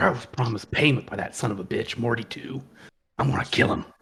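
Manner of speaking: very low, menacing grumble. A game master voicing Harlan, muttering under his breath. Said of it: "but like under his breath".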